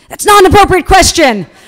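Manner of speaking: very high, shrill, fast, loud barked delivery. Retelling a press event where the publicist finally cuts in: retelling a publicist's bark. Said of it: "the publicist barks".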